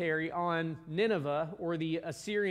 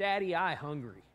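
put-on simple, sweet small-boy talk like a three-year-old; 3 dB quieter than usual. Retelling what a three-year-old son says on waking: imitating Samuel, a three-year-old. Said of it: "he's just like this sweet little boy".

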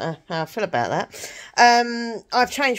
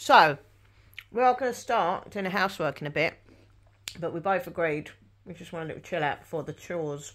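talking while chewing, quieter; 5 dB quieter than usual. Speaker eats an apple while describing plans before chores, talking while chewing. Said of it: "so if I'm chewing, I'm eating an apple".

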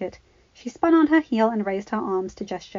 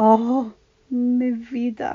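husky, hoarse, tearful, watery laughing words; 2 semitones higher, 3 dB louder than usual. Narrator reading a grandmother answering a worried question, with a hoarse, watery laugh. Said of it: "said Abuela with a hoarse, watery laugh".

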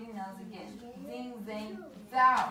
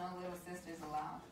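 normal talking voice

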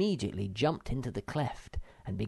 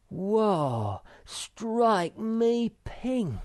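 startled cry, very high and very slow; 10 semitones higher, 5 dB louder than usual. Narrator reads Moomin Troll seeing a giant lizard, exclaiming. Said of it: "exclaimed Moomin Troll".

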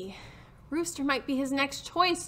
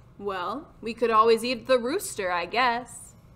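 usual speaking voice

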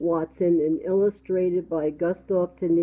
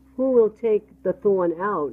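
ordinary delivery, nothing marked

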